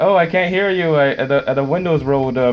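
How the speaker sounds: play-acted, teasing, sarcastic mocking taunt. Retelling taunting an angry driver through a closed window: retelling own sarcastic taunt. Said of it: "I just sarcastically was like".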